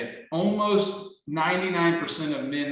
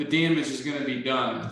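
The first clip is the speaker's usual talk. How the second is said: ordinary delivery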